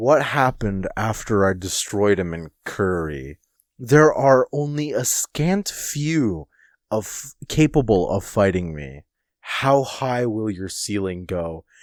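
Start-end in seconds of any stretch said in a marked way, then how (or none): none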